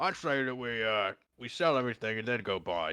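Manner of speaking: high-pitched mumble through a full mouth. Voicing Morty as he pipes up to the boys, talking with a mouthful. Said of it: "with a mouthful".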